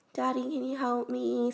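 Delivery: tiny, cute, super soft, high little voice. Describing asking for help in a little voice, super soft and cute. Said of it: "Just like super soft and cute".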